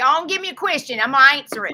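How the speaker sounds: put-on deep South US accent, loud and high. Asking others for a question to answer: deep South accent. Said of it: "I don't know what that accent is".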